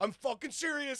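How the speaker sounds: mock shrill, very high, weepy sobbing. Retelling a man who fell into a snake trench, imitating someone crying. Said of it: "he starts crying and he's going".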